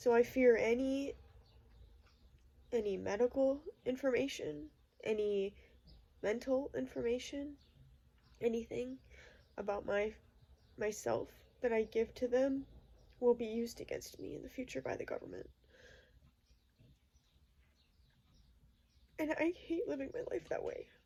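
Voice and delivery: speaking through tears. Speaker opens up about their own life, crying. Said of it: "I hate that I'm crying right now".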